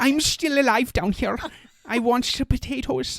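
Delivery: put-on very high Scandinavian accent. Describing a pile of people, the speaker voices one still alive in a Scandinavian accent. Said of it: "That's my Scandinavian accent".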